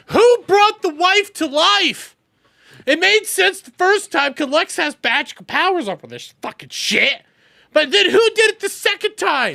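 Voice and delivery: incredulous, angry ranting.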